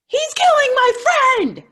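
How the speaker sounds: frantic, panicked scream, very high and very loud. Retelling what she screamed on the phone call, imitating frantic screaming. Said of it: "So she's screaming in the".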